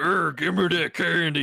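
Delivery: put-on old man voice with Southern accent. Showing how the candy line sounded, in a Bill Clinton voice. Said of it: "like Bill Clinton sounded".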